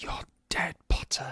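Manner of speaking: very quiet, threatening, menacing hushed whisper. Retelling a scene where Malfoy sees Harry in the hallway: Malfoy's whisper. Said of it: "Malfoy he whispers at him".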